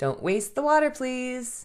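kind, gentle tone. Parent retelling what they told their three-year-old daughter, retelling a kind request. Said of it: "I asked her kindly".

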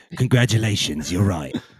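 gruff put-on English accent. Congratulating the other speaker on being right: Roy Kent impression. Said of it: "I was doing my, uh, Roy Kent impression".

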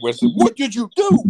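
put-on angry inflection. Acting out a favorite line where he asks Ray what he did, mock-angry. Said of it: "the inflection, he's so angry".

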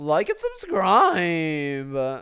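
high, swooping, sing-song put-on voice. Signing off at the end, the speaker uses a Lola voice. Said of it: "I'm going to end this with a Lola voice".

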